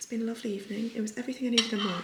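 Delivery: hushed, soft whisper. Signing off to viewers for the night while the world sleeps, whispering. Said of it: "I'm trying to whisper because the whole world is asleep".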